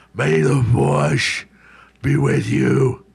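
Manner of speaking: loud, rough, gritty comic-book superhero voice. Speaker tries out different versions of a movie line: Batman voice. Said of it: "That's what Batman doin'".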